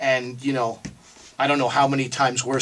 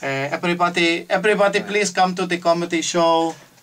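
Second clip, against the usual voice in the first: put-on Filipino accent, higher pitch; 5 semitones higher than usual. Host inviting everyone to the comedy show, imitating a friend's mother's Filipino accent. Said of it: "That's how my friend RJ's mother speaks".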